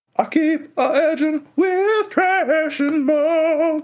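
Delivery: very high, roomy voice, "muck" drawn out. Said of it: "roomy in the voice".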